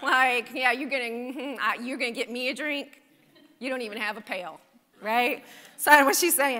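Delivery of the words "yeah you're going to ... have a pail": imitated sarcastic tone. Acting out the woman's reply to Jesus: imitating a sarcastic tone. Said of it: "hear the sarcasm in her voice".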